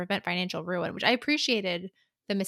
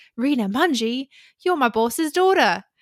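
loud, high, put-on Australian accent; 6 semitones higher, 9 dB louder than usual. Retelling a scene, voicing a character meant to be British: put-on Australian accent. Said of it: "I don't know why that's Australian".

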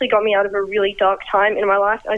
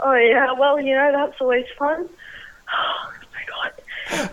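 overexcited, flustered mini freak-out; 4 semitones higher, 3 dB quieter than usual. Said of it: "I'm just kind of having a mini freak out".

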